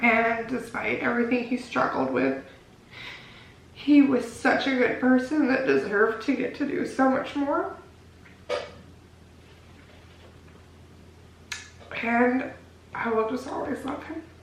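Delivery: tearful voice, crying while speaking. Remembering a loved one before presenting a collection, crying while speaking. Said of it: "stop crying".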